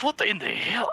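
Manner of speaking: put-on Scottish accent. Voicing a trapped dwarf who spins in a bubble: Scottish accent. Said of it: "I can't do a Scottish accent like that".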